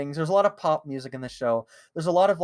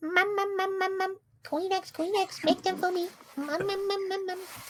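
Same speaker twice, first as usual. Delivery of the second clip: put-on squeaky, high cartoon baby voice; 5 dB quieter than usual. Asked to reenact the scene, doing baby Sam I Am: imitating baby Sam I Am in Pizza Steve voice. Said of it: "Sam I Am as a baby with his Pizza Steve voice".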